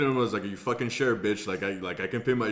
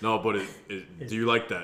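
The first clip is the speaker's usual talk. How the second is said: usual speaking voice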